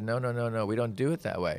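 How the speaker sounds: ordinary talk, nothing marked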